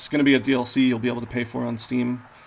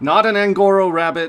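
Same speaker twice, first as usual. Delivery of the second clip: sudden outburst, voice raised and higher; 7 semitones higher, 8 dB louder than usual. Comparing two people to a rabbit and a tortoise, correcting himself in a raised voice. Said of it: "didn't mean to raise my voice".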